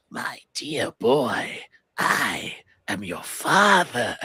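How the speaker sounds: unhinged, manic comic-book villain voice. Retelling how the Trickster taunts someone he's beating up, in a Joker voice. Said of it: "doing his like Joker voice to him".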